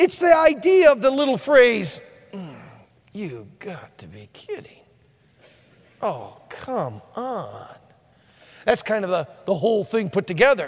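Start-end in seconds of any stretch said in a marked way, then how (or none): 2.3-7.7 very quiet, low, grumbled murmur. Showing what a selfish, dissatisfied murmur sounds like: murmured under the breath. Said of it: "something that is said almost underneath your breath".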